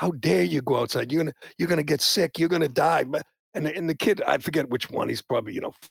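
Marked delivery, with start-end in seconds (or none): 0.0-3.0 mock berating tirade, scolding. Retelling a boss screaming at a staff member for going out: imitating Howard Stern screaming. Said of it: "literally was screaming at him".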